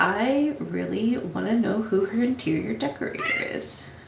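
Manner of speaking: soft, distant, hushed under-the-breath aside. Voicing the character Vega in character, speaking quietly. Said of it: "Vega will say quietly".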